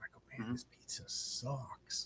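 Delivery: whispered, drawn out very slowly. Retelling a remark to a friend at a pizza table: retelling a whisper. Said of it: "I just whispered to him".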